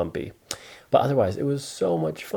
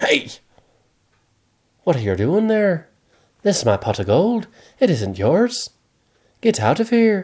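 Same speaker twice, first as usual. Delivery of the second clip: put-on pitched-up Irish-accented leprechaun voice; 5 semitones higher than usual. Storyteller voices a leprechaun catching a boy at his gold, Irish leprechaun accent. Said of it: "He's Irish".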